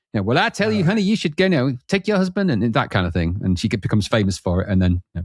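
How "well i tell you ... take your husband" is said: very high-pitched Southern belle voice. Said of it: "[name] Southern Belle way".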